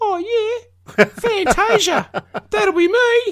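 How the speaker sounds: youthful voice, very high and very slow. Retelling answering a club door attendant who questioned them, in own 19-year-old voice. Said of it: "in my 19-year-old voice".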